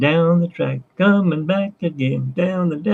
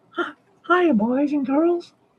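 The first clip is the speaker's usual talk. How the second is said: very high-pitched squeaky voice; 10 semitones higher, 4 dB quieter than usual. Greeting Lewis, speaker does a Mickey Mouse voice. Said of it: "I lost Mickey's voice".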